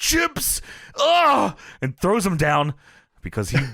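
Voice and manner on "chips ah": very high-pitched cry. Retelling a commercial with a bag of chips: imitating Macho Man yelling. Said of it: "he has a bag of chips and he yells".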